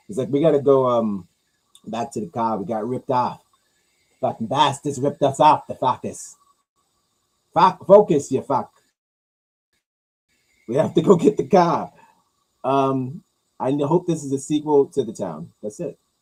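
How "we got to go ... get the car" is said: fake, put-on Boston accent. Acting out brothers from a movie sequel: put-on Boston accent. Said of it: "I do a better, um, Boston, um, accent when I'm drunk".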